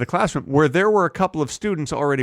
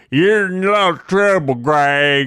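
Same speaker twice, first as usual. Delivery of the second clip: Texas drawl with one word stretched out; 2 semitones higher, 4 dB louder than usual. Retelling what a coach from Texas said in biology class: imitating Coach Dumbass's Texas accent. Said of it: "so he talked like this".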